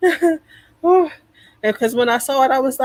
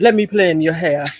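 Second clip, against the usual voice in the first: put-on seductive voice, lower; 8 semitones lower than usual. Imitating a man known for his voice: imitating his sexy voice. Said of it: "I'm being him right now".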